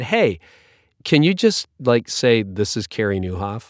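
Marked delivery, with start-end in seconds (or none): none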